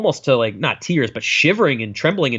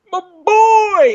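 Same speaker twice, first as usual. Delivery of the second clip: put-on very high, loud, over-the-top wailing sob, boy drawn out; 6 dB louder than usual. Retelling how a grieving father sounds in a film: imitating a bawling man. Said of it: "bawling and go".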